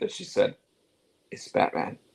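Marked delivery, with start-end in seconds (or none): 1.3-1.9 muttering under the breath. Retelling a wrestler's aside: imitating Rhea Ripley muttering under her breath. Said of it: "under her breath".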